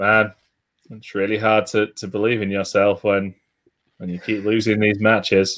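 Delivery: dull, flat, bored monotone drone, very low pitched. Quoting someone pouring his heart out, in a mock-bored flat voice. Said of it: "I'm trying to do this in the most boring voice I can think of".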